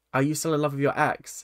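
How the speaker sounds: ordinary delivery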